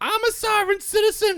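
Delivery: high, loud, mock outraged outburst.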